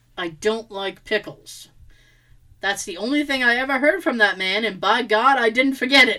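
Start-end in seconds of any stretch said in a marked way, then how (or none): 0.2-1.7 mock threatening, low, ominous, menacing delivery. Retelling a customer who stared at the teenage speaker, a mock-menacing line. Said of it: "menacingly says".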